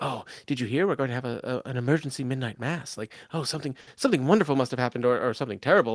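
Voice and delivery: excited gossipy chatter. Voicing villagers who hear of an emergency midnight mass: excited gossiping villagers. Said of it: "they're all gossiping at the moment".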